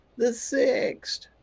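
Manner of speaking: weird, odd, very high-pitched voice. Host welcoming everybody to the show and repeating the date: weird voice. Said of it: "That's a weird voice I just come out with there".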